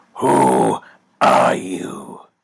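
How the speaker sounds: very loud, growled, rough snarl. Reading a story aloud, the hero questions a man he holds in the air: snarling. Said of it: "snarled Batman".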